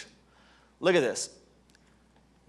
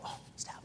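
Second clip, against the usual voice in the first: hushed whispered aside. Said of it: "I'll go".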